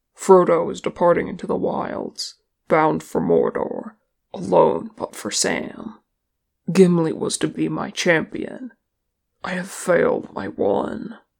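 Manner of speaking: usual speaking voice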